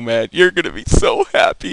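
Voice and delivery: loud, a little dramatic, hyped gushing.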